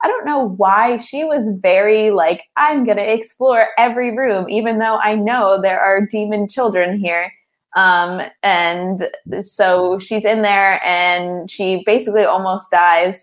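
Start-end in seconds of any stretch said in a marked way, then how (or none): none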